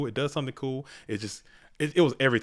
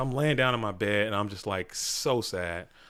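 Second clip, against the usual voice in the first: usual speaking voice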